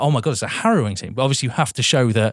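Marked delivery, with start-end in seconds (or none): none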